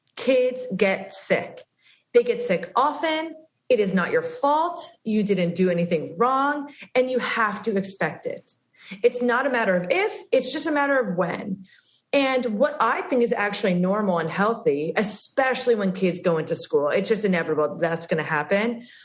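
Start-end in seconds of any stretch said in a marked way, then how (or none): 0.2-11.7 slow, measured, deliberate emphasis on each word. Stressing an important point so people really listen: speaking slowly. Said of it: "I'm gonna say it slowly".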